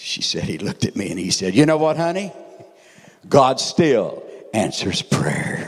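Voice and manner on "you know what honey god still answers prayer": firm, strong, raised voice. Retelling what a woman said a dying man told her: retelling a strong voice. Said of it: "And in a strong voice".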